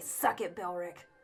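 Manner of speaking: whispered, barely voiced mutter under the breath. Voicing a character who looks at her certificate: muttered under her breath. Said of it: "under her breath".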